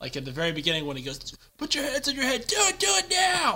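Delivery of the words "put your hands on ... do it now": high, loud yelled line. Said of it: "so I'll yell stuff out like".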